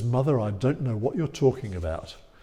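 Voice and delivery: acted-out, mock deadpan delivery. Retelling the story of Jesus answering his mother Mary, retelling a deadpan reply. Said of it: "he looks at her deadpan and says".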